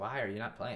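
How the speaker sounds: usual speaking voice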